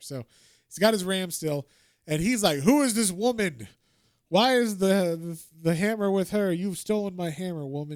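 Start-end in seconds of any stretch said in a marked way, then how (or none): 2.6-8.0 mock indignant, furious, accusing angry outburst. Retelling a comic scene where Thor finds the hammer: imitating angry Thor. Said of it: "he's all angry".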